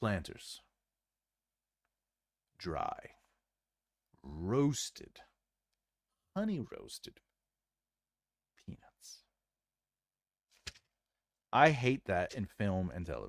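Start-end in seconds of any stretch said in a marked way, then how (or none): 0.0-9.2 slow, hushed, breathy, drawn-out delivery. Demonstrating what a slow film line sounds like, slow delivery. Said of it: "So what is slow?".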